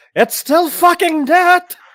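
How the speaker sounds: shouting. Voicing a character shouting back from the tunnel: shouting back. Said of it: "the tunnel just shout back".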